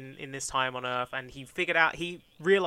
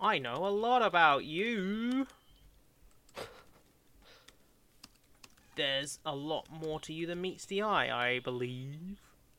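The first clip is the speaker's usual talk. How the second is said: talking slowly; 2 semitones higher, 3 dB quieter than usual. Reading out a mystery man's lines while writing the script: talking slowly. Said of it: "talking slowly as I'm writing".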